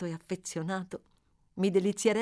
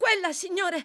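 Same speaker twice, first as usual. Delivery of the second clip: high, sudden crying out, shouting; 10 semitones higher, 4 dB louder than usual. The boy in the carriage points outside, cried out. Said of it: "gridò Oliver".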